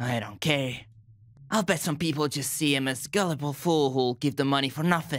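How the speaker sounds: put-on child voice. Voicing a game's dialogue lines as the character Theo: child Theo voice. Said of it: "child my, uh, Theo voice".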